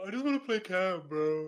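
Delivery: acted upset and put out. Retelling what a friend said on Discord, imitating JJ sounding upset. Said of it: "J J's got that voice that he just sounds upset all the time".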